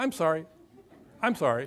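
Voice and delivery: mechanical, rote, repeated sorry. Retelling children caught misbehaving: imitating a child parroting sorry. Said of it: "A little, little parrot".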